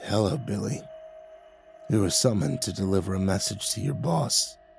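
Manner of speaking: soft, bubbling, gurgling, rasping voice. Reading a story, a hooded figure addresses the narrator: gurgling, rasping voice. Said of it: "a gurgling voice rasped".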